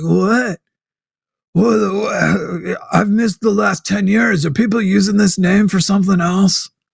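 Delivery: mock spaced-out stoner talk, high and very stoned. Imitating a caller freaking out while super stoned: imitating someone very stoned. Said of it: "he's super stoned".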